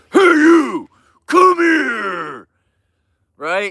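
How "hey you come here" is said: over-the-top aggressive, very high, drawn-out bark. Imagining how Napoleon sounded to illustrate a point, mock-aggressive Napoleon voice. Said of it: "the most aggressive voice in the world".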